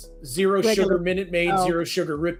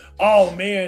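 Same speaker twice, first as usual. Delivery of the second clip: put-on old, decrepit, frail voice; 4 dB louder than usual. Retelling walking in the door for the delivery people: retelling acting old and decrepit. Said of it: "I kinda walked in the door going".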